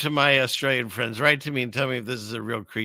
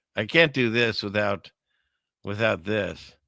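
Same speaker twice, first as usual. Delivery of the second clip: ordinary talk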